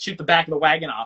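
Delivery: ordinary delivery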